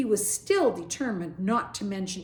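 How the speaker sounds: ordinary delivery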